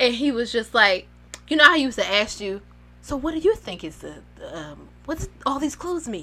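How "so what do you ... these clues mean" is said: quiet, gentle voice. Retelling how Steve turned to the camera: soft voice imitating Steve. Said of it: "he got the soft voice".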